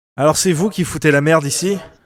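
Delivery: put-on loud, sure-footed, self-assured old man voice. Voicing an old man confronting the newcomers: confident old man voice. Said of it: "Avec sa voix de vieux. Mais très assuré".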